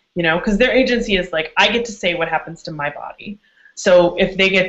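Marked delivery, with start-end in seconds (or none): none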